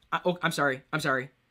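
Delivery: ordinary talk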